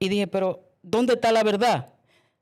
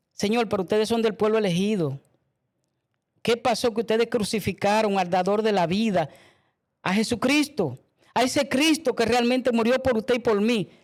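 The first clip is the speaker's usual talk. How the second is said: plain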